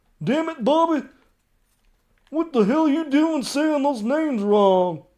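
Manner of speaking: bad, very loud, high, shrill holler. Scold yourself for purposely saying names wrong, in a terrible Hank Hill impression. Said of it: "that was my Hank Hill impression".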